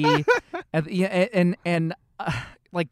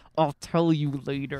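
words spoken through clenched teeth. Retelling a moment at the wedding, speaking through clenched teeth. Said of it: "I literally say through my teeth".

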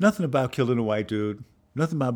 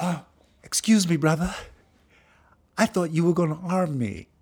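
put-on unbroken young voice failing to sound grown-up; 8 semitones higher than usual. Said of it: "try to drop my voice an octave".

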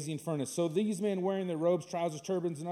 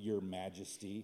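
mock jeering, snide and taunting tone; 10 semitones lower, 12 dB quieter than usual. Picturing three teenagers addressing the king: imitating a mocking tone. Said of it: "mocking attitude".

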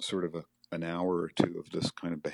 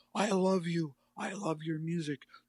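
shrieking, very high-pitched screaming yell; 12 semitones higher than usual. Speaker recounts a man who smashed a guitar yelling at another man; retelling a yell. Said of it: "he's like yelling at Bob".

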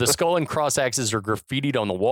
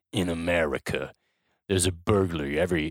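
put-on affected movie voiceover, lower in pitch; 7 semitones lower, 4 dB quieter than usual. Retelling the opening voiceover of a film: imitating Stallone's affected voiceover. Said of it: "the most affected voiceover maybe ever from Stallone slash Cobra".

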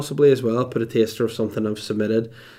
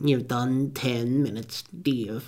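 soft, wee, weird little voice; 6 dB quieter than usual. A performer imitates the snake rat announcing his time; wee weird voice. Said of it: "in his wee weird voice".

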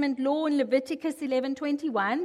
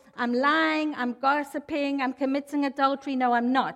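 plain

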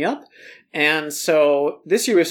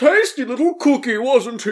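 put-on jolly character voice; 8 semitones higher, 3 dB louder than usual. Playing Santa Claus, answering what happened to Ryan, in a jolly Santa Claus voice. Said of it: "I'm Santa".

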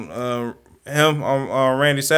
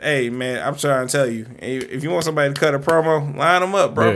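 usual speaking voice

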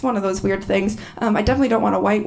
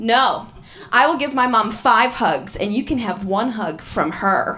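usual speaking voice

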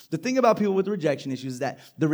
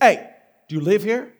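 stern, raised voice; 4 semitones higher, 6 dB louder than usual. Retelling what a gentleman at the door asked him, stern voice. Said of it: "and in a stern voice".

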